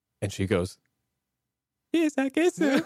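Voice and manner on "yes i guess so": very high-pitched voice. Retelling a proposal and imitating the reply: imitating Priscilla's voice. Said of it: "That's my impression of her voice".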